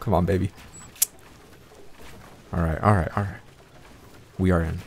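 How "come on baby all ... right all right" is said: quick, rushed, scared whisper under the breath. Streamer playing a game, just making it in, scared. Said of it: "I'm so scared right now".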